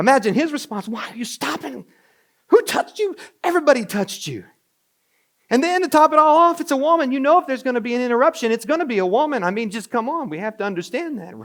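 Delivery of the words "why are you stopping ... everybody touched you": put-on frantic, fed-up, desperate pleading tone. Acting out the desperate father's response to Jesus stopping: imitating desperate exasperation. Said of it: "this is Jairus who's desperate".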